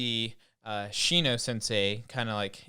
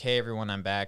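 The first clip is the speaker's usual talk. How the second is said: ordinary talk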